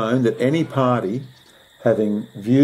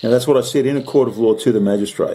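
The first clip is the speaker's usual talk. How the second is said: ordinary talk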